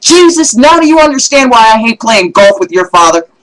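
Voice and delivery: high, loud, furious, tantrum-like scream. Telling a golf joke, quoting Moses mid-tantrum: imitating Moses screaming. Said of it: "starts screaming".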